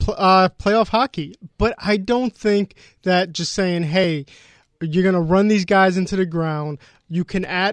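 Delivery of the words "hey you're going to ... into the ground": ordinary talk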